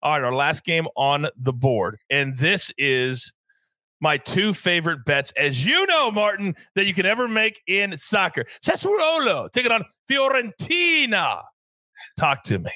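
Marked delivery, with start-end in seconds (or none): 8.6-11.4 pitched-up native-sounding Italian pronunciation. Announcing the final soccer bet on the board, in an Italian accent. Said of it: "You just sound like an Italian native".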